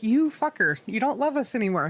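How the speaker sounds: indignant, offended, accusing outburst with wounded pride. Retelling what was said to the partner: imitating own offended outburst. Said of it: "I was so offended by that".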